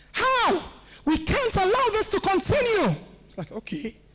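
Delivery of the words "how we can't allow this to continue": angry, raised, pitched-up orator's voice. A speaker teaching voice use demonstrates showing anger, raised angry voice. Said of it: "When you want to show anger, you raise your voice".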